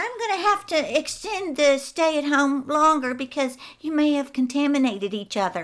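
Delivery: put-on nasally Michigan accent. Recounting what she said to protesters, the speaker does Gretchen's nasally Michigan accent. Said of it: "she said it in that nasally Michigan accent".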